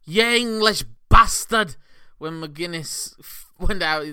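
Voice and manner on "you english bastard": put-on Scottish brogue shout, higher and louder. Retelling what an audience member yelled at a match: imitating a yell in a scottish brogue. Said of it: "In a very clear to me Scottish brogue".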